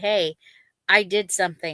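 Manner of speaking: ordinary delivery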